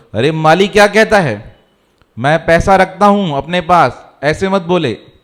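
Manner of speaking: normal talking voice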